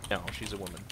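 quiet, deadpan, matter-of-fact delivery. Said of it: "You said it so matter-of-factly".

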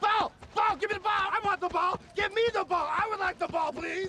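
loud, very high, insistent and demanding shouting. Showing a player how to sell a run: loud demanding call for the ball. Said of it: "make it a performance".

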